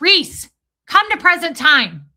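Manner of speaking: put-on very loud, high, angry voice. Retelling how an auditor scolded the speaker, imitating an angry scolding. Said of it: "my auditor would get so mad at me".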